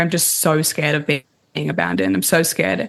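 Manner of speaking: ordinary talk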